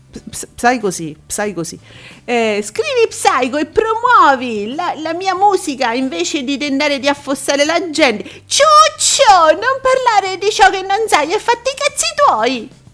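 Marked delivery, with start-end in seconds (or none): 2.7-12.7 high voice, wildly swinging pitch, unhinged. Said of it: "ho cercato di fare la voce sgangherata".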